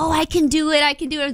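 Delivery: acted eager, keen newcomer voice, high-pitched. Imitating how eager wrestling newcomers sound: imitating excited wrestling newcomers. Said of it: "So they're all excited".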